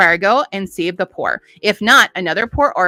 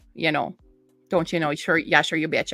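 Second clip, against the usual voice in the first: quick, soft Minnesota accent, held steadily throughout; 3 semitones lower, 7 dB quieter than usual. During a book review, slipping into the Minnesota accent the speaker's family uses. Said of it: "really steadily into this accent right now".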